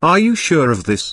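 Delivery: worked-up, excited and eager exclamation. Reading a story, a character questions a surprising claim: excited cry. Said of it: "Ricardo cried excitedly".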